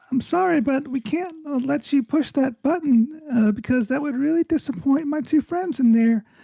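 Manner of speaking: tiny voice at a very high pitch. Captain Beefington leans close to an unconscious officer; tiny quiet Captain Beefington voice. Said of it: "says in this little tiny, quiet, big voice".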